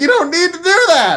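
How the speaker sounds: very high, shrill screaming and shouting. Retelling what they screamed at a player leveling up: retelling a scream at someone. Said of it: "we kept screaming".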